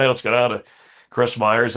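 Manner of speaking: usual speaking voice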